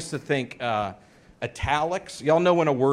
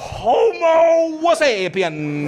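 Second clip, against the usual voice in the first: heavily exaggerated, over-the-top Italian accent; 14 semitones higher, 7 dB louder than usual. Retelling reading a textbook aloud in class, exaggerated italian accent. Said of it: "I thought italics meant that I was supposed to read it in an Italian accent".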